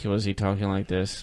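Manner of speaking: low, soft, flat, bored uninterested monotone.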